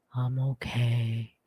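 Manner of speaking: put-on just-woken-up voice. Retelling how Tom answers after showing up late, imitating sleepy, just-woken Tom.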